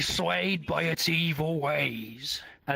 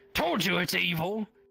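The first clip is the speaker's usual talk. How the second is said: put-on goblin voice, higher; 5 semitones higher than usual. Voicing a goblin who calls the sword evil: goblin voice. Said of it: "And he goes".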